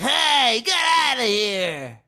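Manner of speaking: annoying, high, loud, nasal whine. Speaker showing how their own voice sounds when talking: high-pitched nasal voice. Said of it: "I have this high pitched, fucking like nasally".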